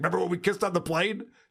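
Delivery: eager, thrilled, fast, excited gushing. Retelling a friend's excited remark about a video: imitating John excitedly. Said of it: "He's like".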